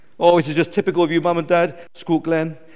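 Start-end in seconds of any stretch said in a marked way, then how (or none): none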